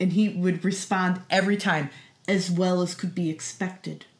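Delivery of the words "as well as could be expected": mock bone-dry, unbothered, quiet, flat deadpan. Retelling how a larp character answered every greeting: imitating Simon Moon's deadpan. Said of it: "Just deadpanning".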